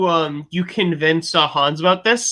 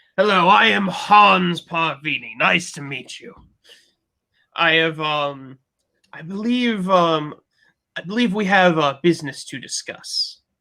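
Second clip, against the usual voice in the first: slow, stagey put-on voice of a petty noble. Voicing a noble who greets the players at dinner: voicing a shitty noble. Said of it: "do the shitty nobles".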